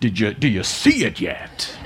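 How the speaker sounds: southern preacher impression. Speaker repeating his question after noting how he sounds, southern preacher voice. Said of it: "I sound like a southern preacher".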